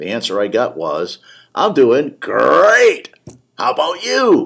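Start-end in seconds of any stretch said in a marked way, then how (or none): 1.5-4.5 booming voice, big and slow. Retelling the attendant's answer to "how you doing": Tony the Tiger voice. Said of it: "a voice sounded for all the world like Tony the Tiger".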